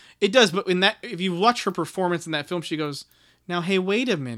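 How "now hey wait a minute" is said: put-on calm, unforceful delivery, slower. Describing an actress's performance in a film, imitating her calm delivery. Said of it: "That's her delivery".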